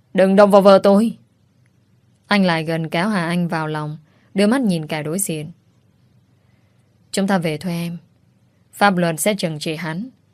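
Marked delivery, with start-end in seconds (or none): 0.2-1.2 shouting, much louder. As police drag his wife away, a husband shouts at them. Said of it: "Dĩ Tường quát lên".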